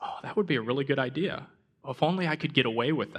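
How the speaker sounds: ordinary delivery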